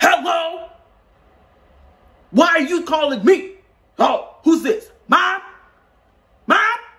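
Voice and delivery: shrill, very high screaming and yelling. Showing how odd it would be to answer the phone yelling into it. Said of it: "It's like it's like if I just went to like uh answer the phone".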